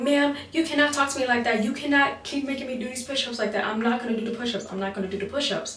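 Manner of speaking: acted-out angry, defiant, pissed-off tone. Retelling refusing a woman's push-up order: imitating own angry retort. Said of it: "Now I'm pissed off".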